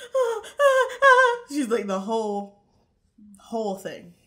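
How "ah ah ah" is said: very high, very loud, shrill fake hysterical sobbing. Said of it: "She's pretending to be hysterical".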